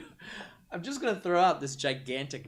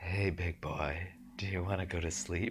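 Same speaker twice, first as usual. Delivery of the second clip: put-on asmr voice, quieter and lower; 7 semitones lower, 6 dB quieter than usual. Speaker retells ASMR tracks found to help with sleep, imitating an ASMR recording. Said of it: "A S M R".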